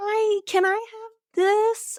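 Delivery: put-on very high, tiny, sweet, cute girly little voice. Talking about girls, the speaker imitates them in a cute little girly voice. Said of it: "they've got the cute little voices".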